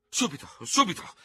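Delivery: very high, frantic stammering, beside himself. Ferò, sword drawn, stops the departing Norman, stammering beside himself. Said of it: "balbettava Ferò fuori di sé".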